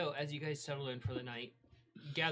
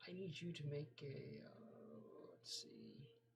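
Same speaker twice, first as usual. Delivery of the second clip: very quiet, slow, whispered mumble to oneself; 10 dB quieter than usual. Starting to ask the other speaker for something, mumbling to oneself. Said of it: "I'm mumbling to myself".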